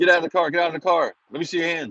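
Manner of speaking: mock high, freaked-out police officer shouting. Retelling being stopped at night by a cop: imitating a cop screaming. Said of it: "he's screaming at me".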